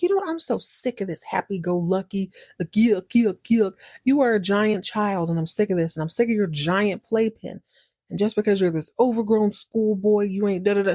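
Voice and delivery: put-on furious, angry rant. Retelling a woman flipping out at a restaurant owner: imitating a furious rant. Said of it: "she's super pissed at this point".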